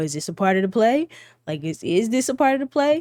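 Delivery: mock heavy, needling, swooping sing-song sarcasm. Retelling how a girl turned to Lexi and repeated the question: imitating a sarcastic tone. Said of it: "in a sarcastic way".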